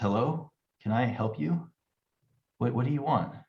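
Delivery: drowsy, just-woken voice. Game narrator voicing someone just roused from bed, in a sleep-heavy, quiet voice. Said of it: "a sleep heavy voice, um, clearly audible but kind of quiet".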